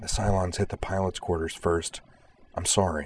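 ordinary talk

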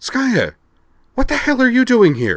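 very high, shrill, alarmed, swooping, startled. Narrator reads Liza Broadbank confronting Skaya in her suite, demanding. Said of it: "she demanded".

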